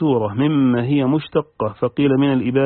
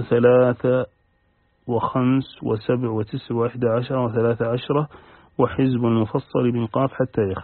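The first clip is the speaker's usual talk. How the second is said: ordinary talk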